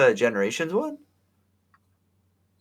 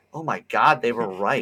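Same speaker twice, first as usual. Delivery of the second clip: plain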